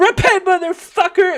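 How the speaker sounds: very loud, very high, shrill shriek. Retelling a protester's words at a man: imitating someone screaming. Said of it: "She's screaming it very".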